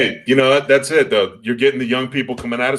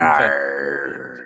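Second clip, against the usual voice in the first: low, shouted pirate voice. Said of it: "That's a pirate".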